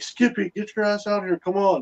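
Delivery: acted, very high, jeering taunt. Retelling banging on a door and calling out to skippy, taunting. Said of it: "I'm like taunting".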